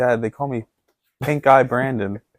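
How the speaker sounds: put-on slow, drawn-out child voice. Acting out a kid home from school telling his dad: playing a bullied kid. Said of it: "your kid came home from school and was like".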